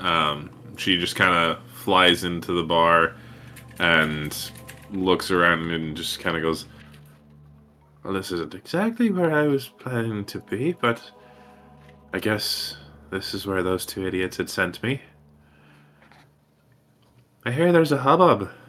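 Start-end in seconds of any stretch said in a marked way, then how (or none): 8.0-18.5 small, high feminine character voice. Voicing a fairy who just flew into the bar: small feminine voice. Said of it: "this small feminine voice say just that".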